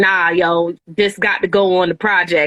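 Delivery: plain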